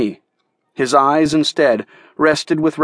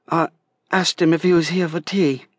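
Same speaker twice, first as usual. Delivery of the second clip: small, quiet, sheepish, embarrassed tone; 3 semitones higher than usual. A girl, asked what she did to warrant a threat, answers: quiet voice. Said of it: "her voice became quiet".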